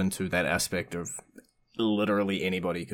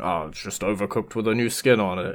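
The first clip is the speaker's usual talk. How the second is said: put-on grumpy, curmudgeonly voice; 4 dB louder than usual. An interviewer voices a viewer's objection, imitating a grumpy curmudgeon viewer. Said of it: "That's a good impression".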